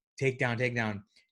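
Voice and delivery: ordinary talk, nothing marked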